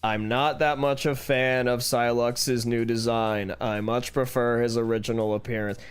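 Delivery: put-on deadpan monotone. Quoting his own earlier remark, in an extremely droll monotone voice. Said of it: "in an extremely droll monotone voice".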